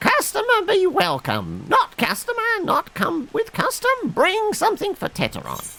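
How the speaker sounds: very high, sing-song, swooping critter voice. Greeting a customer, in a Jar Jar Binks voice. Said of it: "Feel like I should be doing like a Jar Jar Binks voice".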